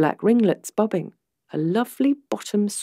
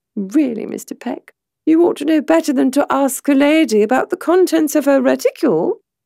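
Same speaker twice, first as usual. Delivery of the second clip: lighthearted, playful, high, raised voice; 7 semitones higher, 5 dB louder than usual. Narrator reads a woman answering a man's question about her bag; playful. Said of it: "there was a playful twinkle in her eye".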